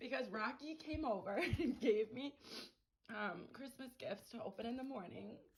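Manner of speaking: in tears, crying, tearful. A woman isolated over Christmas after a flight attendant brought her gifts; crying. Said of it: "I'm just crying".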